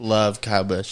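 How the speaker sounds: mocking, sarcastic, insincere admiring tone. Joking about a disliked driver, pretending to love him: sarcastic. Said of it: "I hope you pick up on the sarcasm".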